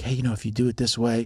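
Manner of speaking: acted-out whisper. Retelling what they whispered to the other owner, retelling a whisper. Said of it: "I whispered to him".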